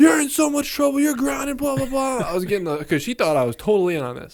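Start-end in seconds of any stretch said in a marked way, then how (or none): 0.0-2.2 mock very high-pitched yelling, scolding tone. Retelling how mom scolded him after catching him: imitating mom yelling. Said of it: "she's yelling at me".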